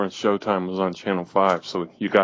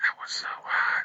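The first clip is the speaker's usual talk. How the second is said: soft, breathy whisper under the breath. Recalling a TV show episode, the speaker acts out a remark in a whisper. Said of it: "Had to whisper out one like".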